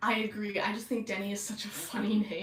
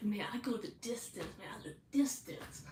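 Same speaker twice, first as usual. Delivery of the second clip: put-on hushed, soft, breathy frat boy voice; 9 dB quieter than usual. Describing a cast of characters, the speaker quotes one: Dormitator's frat boy voice. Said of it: "he talks like a frat boy".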